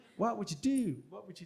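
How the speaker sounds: put-on American accent. Quoting a time travel film's dramatic last line: bad Marty McFly American accent. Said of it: "that's really bad as well".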